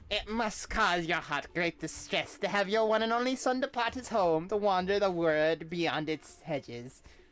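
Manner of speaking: put-on grandmother character voice. Voicing several characters, now playing the grandmother, grandmother voice. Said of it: "this grandmother voice".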